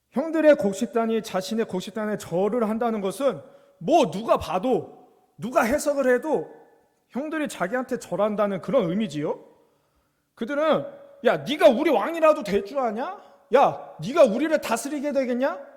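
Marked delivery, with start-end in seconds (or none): 11.3-15.6 loud, high, angry tone. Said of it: "막 화를 냅니다".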